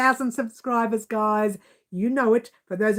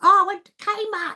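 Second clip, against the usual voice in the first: put-on old man's Australian accent, higher pitch; 9 semitones higher than usual. Retelling what an elderly gentleman with a pram said: imitating an old man's Australian accent. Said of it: "the real Australian with that fantastic accent".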